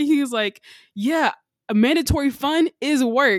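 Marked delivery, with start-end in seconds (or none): 0.9-3.4 play-acted high, drawn-out yelling. A man talking with a coworker yells at his phone; retelling a yell. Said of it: "he's just yelling at the girl".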